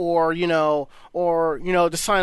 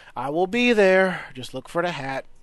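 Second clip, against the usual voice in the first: sounding somewhat dejected and downcast. Inviting listeners to come find them at the rave, almost dejected. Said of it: "You sound almost dejected by that".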